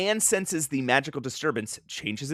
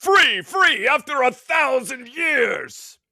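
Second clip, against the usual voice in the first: very high, slow, drawn-out cry; 9 semitones higher, 4 dB louder than usual. Reading a comic aloud, Kalamak cries out after a thousand years: Kalamak voice. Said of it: "That's a good voice".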